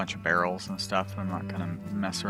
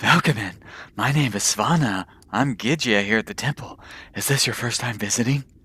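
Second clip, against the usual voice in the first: breathy character voice, much louder; 3 semitones higher, 9 dB louder than usual. Narrator voicing Svana, the young Gidya, greeting visitors with a strangely breathy voice. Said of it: "with a polite smile and a strangely breathy voice".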